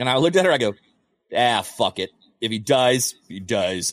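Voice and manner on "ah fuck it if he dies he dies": very slow, careless, dragged-out drawl. Retelling a reply to his worried wife: Arnold Schwarzenegger voice. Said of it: "I did it with the Arnold voice".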